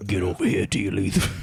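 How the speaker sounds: gruff aggressive cartoon character voice. Voicing a violent brown M and M ripping tea leaves: rough voice. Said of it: "has he got quite a rough voice".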